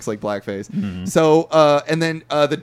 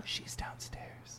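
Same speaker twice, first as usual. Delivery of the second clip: put-on muttering under breath, quieter. Retelling a movie scene where a character mutters a line: imitating muttering under his breath. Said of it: "under his breath".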